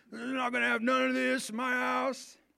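very high rough voice. Speaker mimics a type of guy, in a put-on 'that guy' voice. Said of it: "This is that guy".

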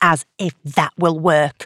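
ordinary delivery

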